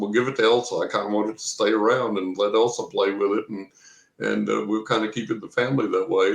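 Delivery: normal talking voice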